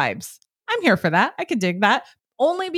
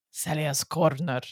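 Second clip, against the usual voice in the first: bad, worsening, put-on Mexican accent, very low voice; 9 semitones lower, 7 dB quieter than usual. Asked for a name for the place, suggesting one, bad Mexican accent. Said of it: "Why is your accent getting worse?".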